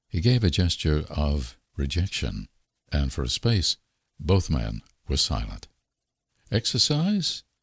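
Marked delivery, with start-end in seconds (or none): 6.5-7.4 shy, unassertive, diffident, very high pitch. Reading a story, Isbister makes a suggestion to the silent, weary man: diffidently. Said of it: "suggested Isbister diffidently".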